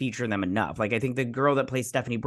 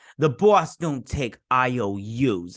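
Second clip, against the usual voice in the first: very slow, drawn-out put-on Brooklyn accent; 3 dB louder than usual. Retelling what a guy in Gotham said, in a Brooklyn accent. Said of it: "a Brooklyn accent or whatever accent".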